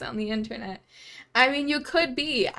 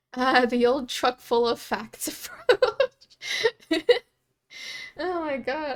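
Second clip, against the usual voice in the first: speaking while laughing, cracking up. Reacting to a funny remark about a truck driver: laughing while talking. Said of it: "I'm crying out of happiness".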